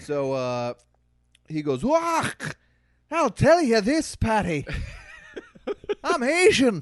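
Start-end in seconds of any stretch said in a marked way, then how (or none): 1.8-6.8 light put-on Scottish accent, very high, loud, slow. Speaker retelling what a passerby said, in a light scottish accent. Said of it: "I opted on the side of Scottish".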